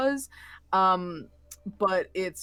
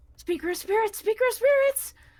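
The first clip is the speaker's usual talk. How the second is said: very high, urgent, pressing calling out; 13 semitones higher, 3 dB louder than usual. Voicing a voice that calls out beside a player in the truck: voice calling out urgently. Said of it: "you hear a voice".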